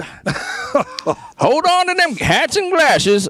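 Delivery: put-on very high-pitched old-timey man voice. Discussing a veteran comic writer, slipping into an old-timey dude voice. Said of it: "that's my old timey dude voice".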